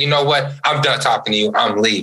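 ordinary delivery

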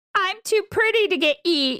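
very high, squeaky cartoon character voice. Asked for an impression of a character, doing an LSP impression. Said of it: "Give me an impression of a character".

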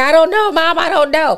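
put-on high, unsure teen boy voice.

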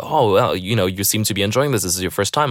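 ordinary talk

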